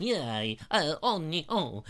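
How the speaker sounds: put-on, mock French accent. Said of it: "You go all French".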